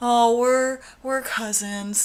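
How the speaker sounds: play-acted, very slow, half-asleep drawl. Retelling how the roommate says it in the movie: imitating a sleepy drawl. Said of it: "that's how she says it".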